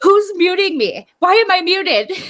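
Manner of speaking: very high, slow, drawn-out scream. Retelling how Laura reacted to being muted while arguing: imitating Laura screaming. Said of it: "Laura starts arguing and screaming".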